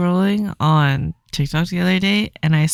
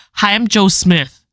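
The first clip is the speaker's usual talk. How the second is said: put-on very strong, thick Indian accent, spoken slowly; 3 semitones higher, 4 dB louder than usual. Retelling a call center worker answering a hacker's call on stream, in a strong Indian accent. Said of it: "but with the strongest Indian accent ever".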